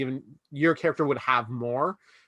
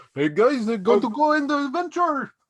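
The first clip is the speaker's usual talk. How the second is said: put-on Scandinavian accent, very high; 11 semitones higher, 4 dB louder than usual. Trying out how he should sound for his part: put-on Scandinavian accent. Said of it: "I don't know if I should sound like uh, Toki".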